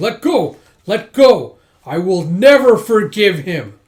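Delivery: raging scream, very loud and drawn out. Recounting a scene where Dragon Boy screams, retelling Dragon Boy's rage scream. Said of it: "And he's screaming".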